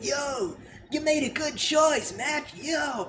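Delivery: high, very slow, stretched-out surfer dude drawl. Imagining the cartoon character's line to Match, Fiery as a surfer dude. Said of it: "is Fiery like supposed to be like like a surfer dude?".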